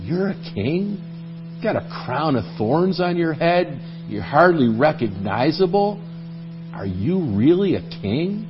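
quiet mock sarcasm. Retelling a question someone asked sarcastically, retelling a sarcastic question. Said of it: "I believe that Pilate asked it sarcastically".

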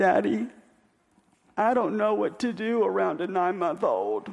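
mock pathetic, heart-tugging, most pitiful voice possible. A father retells what his kid Ezra said, imitating Ezra's pitiful voice. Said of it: "in the most pitiful voice I have ever heard in my life".

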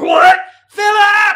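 shrill, very high, very loud, alarmed, urgent yell. The speaker acts out how wives call for their husbands: imitating a wife calling her husband. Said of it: "It sounds like this".

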